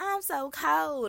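little southern drawl. Retelling a TV scene where Whitley says she's cold: imitating Whitley's southern drawl. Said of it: "in her little southern drawl that she do".

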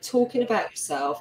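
normal talking voice

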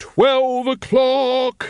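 very high, booming, bellowing call. Narrator reads Carrot's call as he waves the bell over his head, bellowing. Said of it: "he bellowed".

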